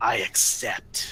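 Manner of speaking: gurgling, bubbling voice, as if through liquid. A game master voices a falling creature sealing a dark pact, in a gurgling voice. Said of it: "you hear a gurgling voice in all of your minds".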